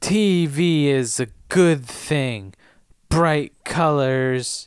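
put-on drunk, tipsy, sozzled delivery. Reading a line after being asked to play drunk Buffy: drunk Buffy voice. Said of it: "You wanna be drunk Buffy?".

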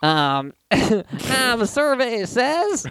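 grating, imitated comedian voice. Urged by another speaker to be more grating, doing a grating Louie Anderson impression. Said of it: "go a little bit more grating".

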